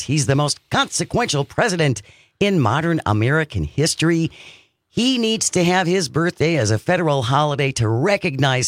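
ordinary delivery

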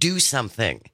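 ordinary talk, nothing marked

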